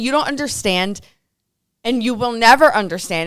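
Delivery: plain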